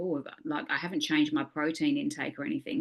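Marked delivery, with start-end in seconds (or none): none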